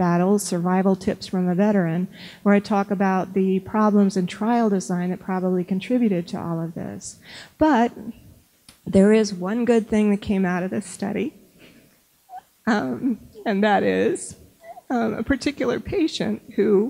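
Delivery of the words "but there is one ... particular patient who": choked-up voice, catching with emotion. Speaker talking about a past clinical trial, getting choked up again. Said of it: "I'm getting choked up again".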